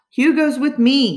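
protesting tone. Hauled inside by Bear, the narrator protests. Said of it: "I protest".

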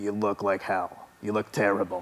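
put-on native New York accent. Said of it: "in his kind of native New York voice".

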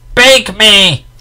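deafening, very loud, very high-pitched yell. A narrator reads a character suddenly shouting out before a crowd, an ear-deafening shout. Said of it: "shouted with the most ear-deafening voice".

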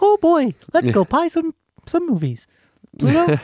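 high, squeaky, sing-song voice. Joking about Disney spending money on movies, Mickey Mouse impression. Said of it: "That's my Mickey impersonation".

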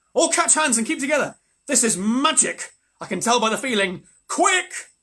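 loud, high-pitched shout. Reading a story, the narrator voices a character calling to the others, shouted. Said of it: "shouted Edmund".

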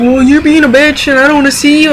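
irritated, pissed-off, angry tone. Retelling an argument, quoting what he said back: imitating someone pissed off. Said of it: "he got all pissed off at me".

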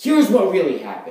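way too exasperated, overly frustrated delivery. An actor reads a scripted line, way too frustrated. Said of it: "That sounded way too frustrated".

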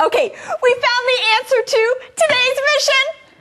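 high, fast, loud excited shout.

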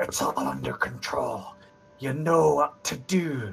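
soft, close half-whisper with no voice at all. A narrator voices a man leaning close to Graven before leaving, half-whispered.

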